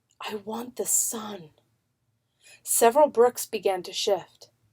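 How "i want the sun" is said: slow, hushed, very quiet half-whisper. Narrating Yusha speaking to the wall after yelling failed, half-whispering. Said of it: "Then she whispered".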